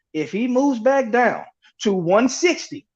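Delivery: slow, deliberate, spelled-out delivery.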